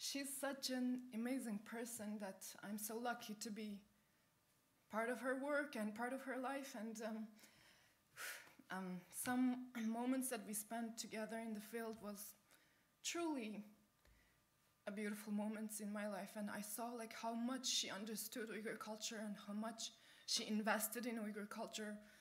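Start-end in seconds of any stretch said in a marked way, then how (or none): 0.0-16.3 high, emotional, moved voice. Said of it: "I'm emotional".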